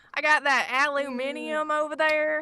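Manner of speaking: slow, flat, drawn-out mock British accent with southern accent.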